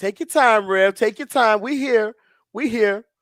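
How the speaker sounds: encouraging responsive call-out. Retelling how the church answers a pausing preacher: imitating a congregant calling back. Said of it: "the preacher will pause like that, and they'll say".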